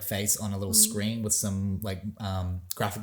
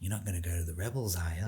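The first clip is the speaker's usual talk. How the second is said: Australian accent impression, quieter; 3 semitones lower, 4 dB quieter than usual. Retelling a fan's impression of an Australian actor. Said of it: "an impression of him being like".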